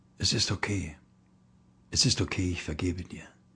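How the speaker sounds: very soft, low-pitched, forgiving murmur. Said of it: "sagt ganz leise".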